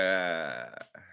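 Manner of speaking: indifferent, dismissive tone.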